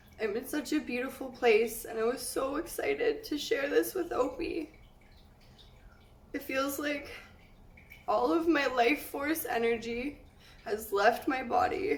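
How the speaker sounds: talking through tears. Speaker sharing how they feel, crying while talking. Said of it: "I can't stop crying".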